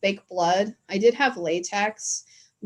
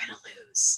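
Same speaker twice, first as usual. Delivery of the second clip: hushed whisper, close to the ear; 13 semitones higher, 6 dB quieter than usual. Retelling what the husband says during a game: imitating a whisper. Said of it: "will whisper in my ear".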